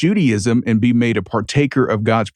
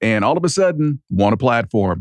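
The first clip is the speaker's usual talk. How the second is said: usual speaking voice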